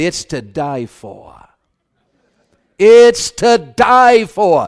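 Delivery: put-on drawn-out South Carolina accent. Retelling a lady's answer about the famous tomato pie, imitating a South Carolina accent. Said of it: "she said it in her South Carolina accent".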